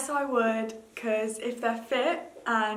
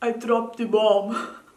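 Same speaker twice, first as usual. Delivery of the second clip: loud, put-on Russian-accented English; 8 dB louder than usual. Showing off accents to a listener, saying a line in a Russian accent. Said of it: "I like my Russian as well".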